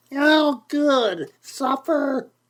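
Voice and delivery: shrill, very high, loud cry. Narrator reading Aunt Edith's reply, in her shrillest loud voice. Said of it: "She responded in her shrillest loud voice".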